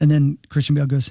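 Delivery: normal talking voice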